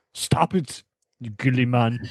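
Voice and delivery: deep, low, slow put-on voice. Saying a line the way their mentor Arnold would: Arnold voice. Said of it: "say it like our mentor, uh, Arnold".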